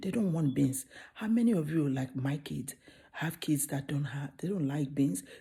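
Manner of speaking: quiet, low, hushed voice, speaking softly. A parent talks to viewers while the kids are sleeping, quiet low voice. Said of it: "my voice is low because my kids are sleeping".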